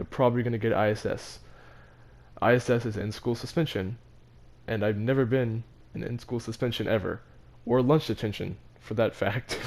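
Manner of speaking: ordinary talk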